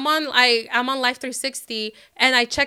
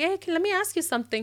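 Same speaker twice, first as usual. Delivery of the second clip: very calm, soft, pitched-up voice; 5 semitones higher, 7 dB quieter than usual. Retelling own words when confronting him about where he was: retelling in a calm voice. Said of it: "very calm".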